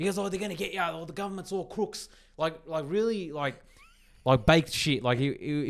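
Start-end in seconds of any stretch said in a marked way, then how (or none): 0.2-2.1 mock frazzled man's shouting street rant. Retelling how the man looked at him and was shouting: imitating a man shouting. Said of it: "he was shouting".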